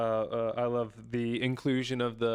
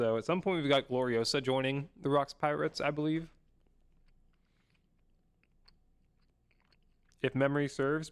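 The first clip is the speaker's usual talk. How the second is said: chewing while speaking, mouth full; 3 semitones higher than usual. Recapping a chapter into the mic while eating cheese, talking while chewing. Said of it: "chewing into the mic".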